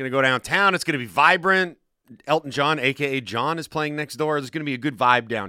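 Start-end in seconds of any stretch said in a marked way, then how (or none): none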